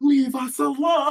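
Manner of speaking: all-out yell in character. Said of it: "Just full on".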